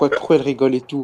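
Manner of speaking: ordinary talk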